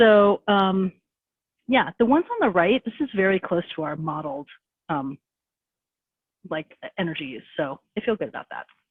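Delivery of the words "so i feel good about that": fast, rushed delivery. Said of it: "I'm sorry I'm talking so fast".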